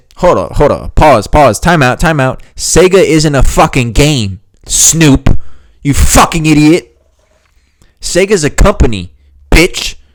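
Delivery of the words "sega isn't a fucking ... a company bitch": worked-up, heated, slow, building angry rant. Reacting to an interview answer about playing Sega: getting mad. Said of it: "I'm getting mad".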